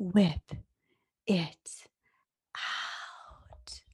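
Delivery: creepy, breathy whisper. Signing off a podcast episode when asked, Babestation voice. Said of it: "I'm going to do my babe station voice".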